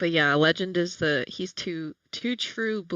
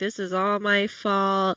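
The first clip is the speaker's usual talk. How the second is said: put-on glum, mopey, sulking tone; 3 semitones higher than usual. Retelling a character's line about his fault: imitating moping. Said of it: "He starts moping again".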